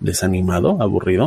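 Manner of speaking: rising question tune on desanimado, aburrido. Saying two names in a question tone, question rise on desanimado, aburrido. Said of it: "Así, en interrogativo, en tono de pregunta".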